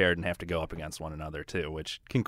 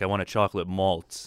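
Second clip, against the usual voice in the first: ordinary delivery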